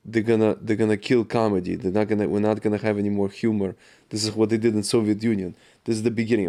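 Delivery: plain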